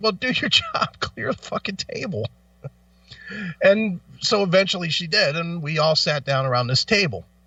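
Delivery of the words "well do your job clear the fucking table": sharp, snappy, acted-out whisper. Retelling how they snapped back at the waitress: retelling a snappy retort. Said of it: "I snapped right back at her".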